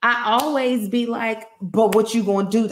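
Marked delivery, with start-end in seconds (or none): 1.6-2.7 loud, fed-up, angry confrontational tone. Describing setting something straight at a store, the speaker is retelling own angry retort. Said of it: "when I am angry".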